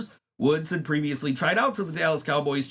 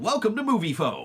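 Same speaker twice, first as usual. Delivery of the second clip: recorded, automated phone-line announcer voice. Retelling answering a stranger's repeated call, imitating Moviefone announcer. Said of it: "and I kept saying".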